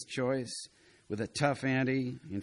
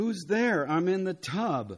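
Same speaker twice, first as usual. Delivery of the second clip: high, raised yell, calling out; 7 semitones higher than usual. A woman in the tub yells through the door at a knocking visitor; yelling. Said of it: "a whoopee girl yelled".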